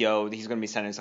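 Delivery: ordinary talk, nothing marked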